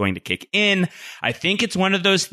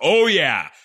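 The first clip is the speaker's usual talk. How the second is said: strong, heavily stressed, emphatic delivery; 2 semitones higher than usual. Retelling an interviewee's answer about secrecy: imitating an emphatic "oh yeah". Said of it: "with emphasis".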